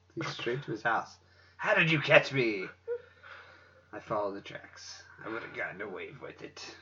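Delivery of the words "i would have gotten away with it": very quiet, hushed put-on pirate voice. Acting out a culprit caught by a detective, in a pirate voice. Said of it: "I don't know why I did a pirate voice".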